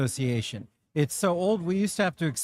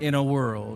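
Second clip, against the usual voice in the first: deep movie-trailer announcer voice with gravitas; 3 semitones lower than usual. Describing a video they made for an event, deep movie-trailer voice. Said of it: "the deep voice with gravitas".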